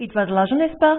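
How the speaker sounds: rising pitch at the end of "n'est-ce pas". Demonstrating a French tag question for learners, rising pitch at sentence end. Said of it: "I've raised my voice at the end of the sentence".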